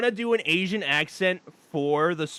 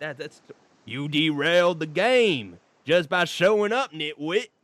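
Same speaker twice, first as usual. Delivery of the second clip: put-on Southern character voice. Working out how to voice the character Trapper, doing Trapper's Southern accent. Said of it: "He's he's a he's like Southern".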